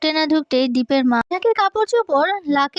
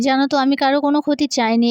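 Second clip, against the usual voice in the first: plain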